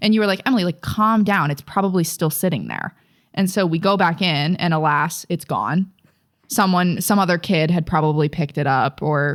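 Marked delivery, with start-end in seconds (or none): none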